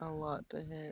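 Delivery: speaking very softly in a quiet voice. Answering the game master about a hit, speaking very softly. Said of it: "you're really soft".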